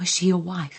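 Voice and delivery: almost a whisper. Narrator reads a woman asking a man about a girl he misses, almost a whisper. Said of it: "almost in a whisper".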